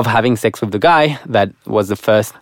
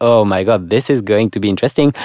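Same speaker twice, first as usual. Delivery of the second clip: ordinary delivery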